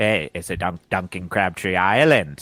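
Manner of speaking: slight, light Liverpool accent. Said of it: "a little bit of a [name] if [name] was saying it".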